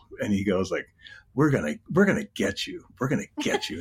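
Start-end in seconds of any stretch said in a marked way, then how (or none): 1.4-3.8 oddly self-satisfied, smug TV ad voice. Recalling an old tv cigar ad, imitating the guy's weird smug delivery. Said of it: "in such a weird kind of smug way".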